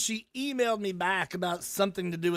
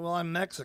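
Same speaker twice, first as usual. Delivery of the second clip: usual speaking voice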